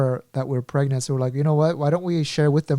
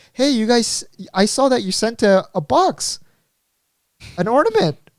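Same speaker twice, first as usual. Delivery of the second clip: baffled, puzzled mother voice, pitched up; 8 semitones higher, 4 dB louder than usual. Retelling what the speaker's mom said at christmas, imitating mom's voice. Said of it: "that was kind of like her voice, like so random".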